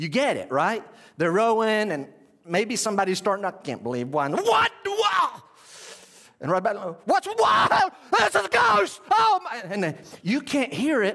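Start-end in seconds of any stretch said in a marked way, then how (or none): 4.3-9.6 very high frightened shrieks, climbing in pitch. Telling of men rowing on deep water at night, speaker acts out: retelling frightened screams. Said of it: "screaming like girls, like I just did".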